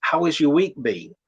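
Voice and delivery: ordinary talk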